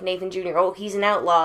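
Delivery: ordinary talk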